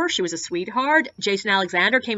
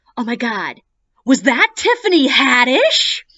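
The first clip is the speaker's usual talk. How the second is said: loud stage whisper, meant to be overheard; 3 semitones higher, 7 dB louder than usual. Retelling a tour guest leaning in to ask: imitating a guest's stage whisper. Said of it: "half whispers, but that stage whisper".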